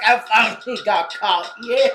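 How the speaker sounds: put-on southern drawl. Imitating a caught killer, happy to be caught: imitating a southern accent. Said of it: "I keep putting a southern accent on him".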